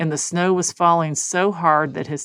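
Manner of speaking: ordinary delivery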